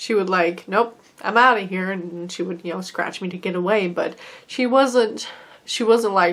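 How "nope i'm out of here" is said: put-on sassy cat voice. Retelling how a sassy cat acted, imitating a sassy cat. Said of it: "she was sassy".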